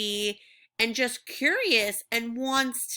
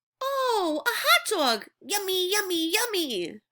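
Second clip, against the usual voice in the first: eager, thrilled storybook bird voice, pitched up; 8 semitones higher than usual. Reading a picture book aloud, changing voice to bring it to life: excited Pigeon voice. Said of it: "Do you see how I'm changing my voice?".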